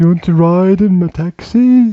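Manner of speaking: slow, loud, drawling South London accent. Describing how people in South London talk, imitating one in a slow South London accent. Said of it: "talk very slowly".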